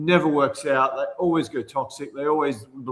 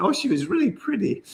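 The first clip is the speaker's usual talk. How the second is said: high, put-on, affected camp voice; 6 semitones higher than usual.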